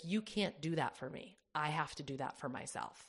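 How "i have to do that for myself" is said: normal talking voice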